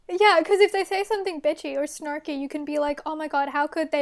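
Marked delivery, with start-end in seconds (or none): none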